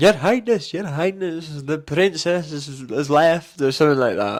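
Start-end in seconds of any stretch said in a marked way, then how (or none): 0.0-3.6 put-on thick Scottish accent, laid on thick, pitched up. Retelling a panto line from the stage: thick Scottish accent. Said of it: "your accent just went so thick then".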